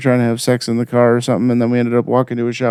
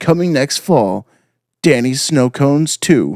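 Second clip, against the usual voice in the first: big theater-trailer narrator announcer voice; 2 semitones higher than usual. Describing a dream, announcing it in the movie theater guy voice. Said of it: "in the movie theater guy voice".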